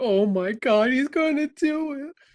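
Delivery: put-on shrill, high, long-drawn-out slow whine. Discussing a film scene, the speaker imitates a character's whining. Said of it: "she's still like whining".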